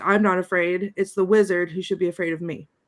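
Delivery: normal talking voice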